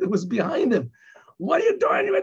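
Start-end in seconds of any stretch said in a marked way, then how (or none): 1.4-2.1 put-on, very high, furious, hot-headed yelling. Retelling how a driver got out and yelled at the man behind him, imitating someone yelling. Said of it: "he started yelling at the guy".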